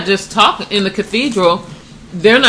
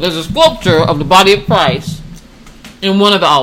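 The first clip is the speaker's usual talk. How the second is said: words muffled by chewing, talking through full mouth; 2 semitones lower than usual. Chatting with a co-host on their podcast, talking with mouth full. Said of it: "Sorry, my mouth is full".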